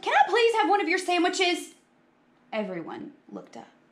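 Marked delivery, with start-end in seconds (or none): 0.0-1.7 impatient outburst, blurted, pitched very high. Interrupting a group, the speaker blurts impatiently. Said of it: "Buster blurted impatiently".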